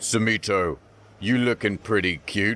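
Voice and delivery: tough, hulking big-guy voice. Acting out a big prison guy coming up to someone: voicing a big prison guy. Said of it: "let's say big prison guy comes up".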